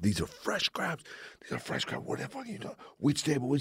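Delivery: mock raging chef, furious, breathy whisper. Retelling how the chef reacted to a well-done crab order, mock-furious chef.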